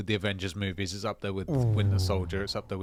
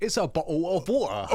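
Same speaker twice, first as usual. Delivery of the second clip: very high British accent, t dropped in "bottle"; 9 semitones higher, 4 dB louder than usual. Mocking how others think the British accent sounds, in a British accent with dropped T's. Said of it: "remove all the T's and put apostrophes".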